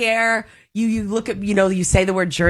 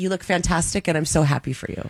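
mock-insincere tone, quieter; 4 dB quieter than usual. Imitating a woman who was unsupportive toward her, mock-insincere tone. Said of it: "Listen to that voice, that tone".

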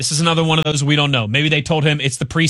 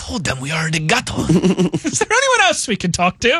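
exaggerated put-on comic French accent, higher; 4 semitones higher than usual. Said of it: "my outrageous accent".

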